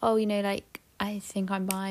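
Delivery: ordinary delivery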